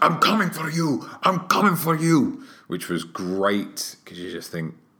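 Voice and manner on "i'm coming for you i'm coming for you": put-on, pitched-up, repeated shout. Retelling how a wrestler shouted at his rival mid-match: imitating Rusev shouting. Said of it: "he was shouting".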